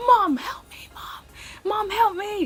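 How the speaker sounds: play-acted very high, loud, near-tearful, panicked yell. Retelling a story, calling out to mom for help, retelling a yell for help. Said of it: "and I'm yelling".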